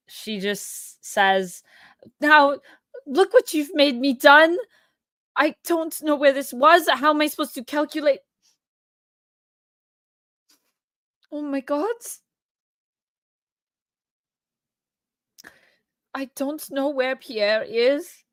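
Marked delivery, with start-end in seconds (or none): 2.2-18.1 high sobbing outburst, crying through every word. Narrator voices a woman who lost track of her husband's troop, sobbing. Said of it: "she just starts to sob and and is".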